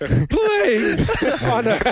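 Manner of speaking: sick-sounding voice, cracking and high. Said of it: "I'm losing my voice 'cause I'm sick".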